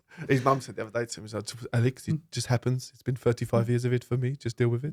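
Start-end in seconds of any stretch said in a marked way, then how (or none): 1.7-4.9 put-on French accent in English. Quoting what his mum said to him: Thierry Henry impression. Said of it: "That was Thierry Henry".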